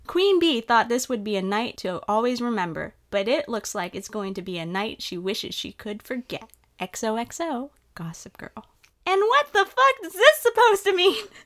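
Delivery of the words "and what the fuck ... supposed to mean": piercing, shrill screech, very high and loud. Narrator reads Blair's reaction to a Gossip Girl post, screeching. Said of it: "Blair screeched".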